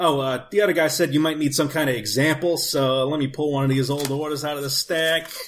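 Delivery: put-on, laid-on blue-collar warehouse guy accent.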